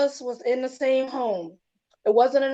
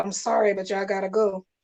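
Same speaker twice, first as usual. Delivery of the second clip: put-on tearful crying voice, lower pitch; 5 semitones lower than usual. Retelling the mother's words at the van: imitating mom crying. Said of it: "my mom was just crying like".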